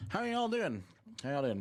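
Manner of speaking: high, quick talk around a lollipop in mouth. Greeting chat after a few days away, talking with a sucker in mouth. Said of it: "Does my voice sound funny?".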